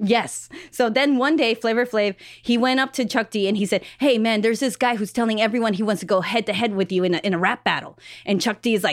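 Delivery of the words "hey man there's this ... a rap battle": ordinary talk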